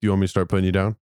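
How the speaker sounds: put-on sarcastic delivery. Retelling a sarcastic reply given to a friend: retelling a sarcastic remark. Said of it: "I actually hit you with a sarcastic".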